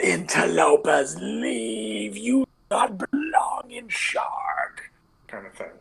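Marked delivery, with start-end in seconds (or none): 0.0-4.8 very high, very slow, rasping, almost hissing. Describing what a voice yells at the players, almost hissing voice. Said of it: "this like almost hissing voice is like".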